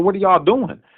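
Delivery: mock, furious, high, angry yelling. Recounting police spraying a crowd, the speaker repeats his words, retelling yelling at police. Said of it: "when I'm yelling at the police".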